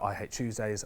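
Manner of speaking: ordinary talk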